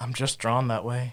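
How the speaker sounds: airy, breathy delivery. Answering a joke question with a rehearsed line: breathy delivery. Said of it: "practicing his breathy delivery of that line".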